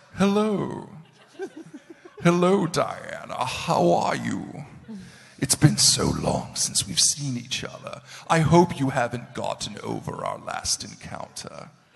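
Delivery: very loud, booming, sinister, menacing demon drawl. Demonstrating the voice you chose for a demon character: Beast Wars Megatron voice. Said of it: "is that a good voice for a demon".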